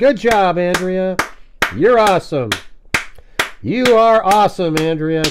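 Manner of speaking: sarcastic, passive-aggressive gushing. Answering a chat commenter with mock passive-aggressive praise. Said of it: "now I'm going to do that to you".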